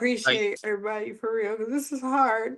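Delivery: tearful, crying through the words. Speaking with others after being brought to tears, crying while talking. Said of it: "Now you got me crying".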